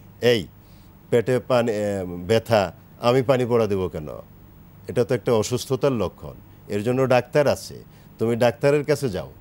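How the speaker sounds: ordinary talk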